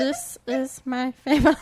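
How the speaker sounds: slow, drawn-out put-on voice. Starting an impression of Stitch for the other host: Stitch voice. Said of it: "I'm gonna be doing an impression of Stitch".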